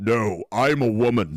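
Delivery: very slow, drawn-out dude voice. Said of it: "a dude's voice going".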